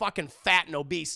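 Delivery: plain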